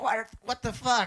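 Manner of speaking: high-pitched, angry yelled outburst.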